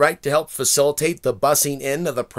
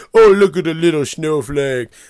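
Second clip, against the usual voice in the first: put-on teasing like a kid, out loud; 6 dB louder than usual. Retelling how people taunt others online: imitating childlike taunting. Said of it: "childlike talking to each other".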